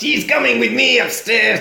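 put-on villain voice, very high and rough. Retelling a film scene where a criminal grabs a lady: put-on baddie voice. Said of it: "That's gonna be my baddie voice".

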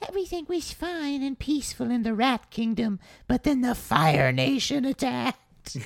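tiny squeak pitched very high. Reacting to another speaker's Avatar story, imagining someone narrating it: squeaky voice. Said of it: "saying in a squeaky voice".

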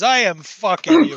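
put-on light Russian accent. Retelling what a man said while patting someone's back, slight russian accent. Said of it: "i can do slight russian".

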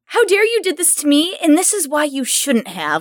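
swooping, self-righteous, offended, indignant outburst. Imitating how an actor delivers every character, righteous indignation. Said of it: "that's the tone that comes across".

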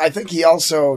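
usual speaking voice

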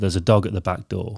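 usual speaking voice

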